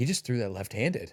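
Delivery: put-on shocked voice. Retelling what a golf partner said: imitating someone shocked. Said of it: "He was, like, shocked".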